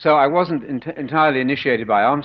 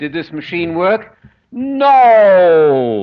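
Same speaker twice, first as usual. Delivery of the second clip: very slow, big booming voice, "no" drawn out; 5 semitones higher, 8 dB louder than usual. Recalling a story a man told years ago, in a big booming voice. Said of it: "And big booming voice".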